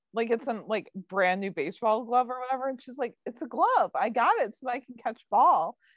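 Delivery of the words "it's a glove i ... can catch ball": put-on guileless, innocent, matter-of-fact tone. Retelling what a woman said arriving with a new baseball glove, mock-innocent tone. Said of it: "in an innocent tone".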